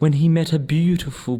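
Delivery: ordinary delivery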